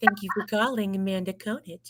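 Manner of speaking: put-on, weird, sultry phone-style voice. Demonstrating her voicemail greeting, in a really weird porn voice. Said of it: "like this like really weird like porn voice".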